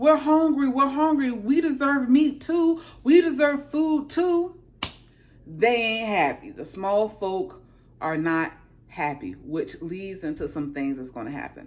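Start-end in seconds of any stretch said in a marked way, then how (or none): 0.0-4.5 put-on high, unhappy, clamouring crowd yell. Retelling a scene where hungry people scream at a cart: imitating people screaming. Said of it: "people are screaming like".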